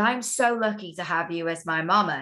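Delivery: plain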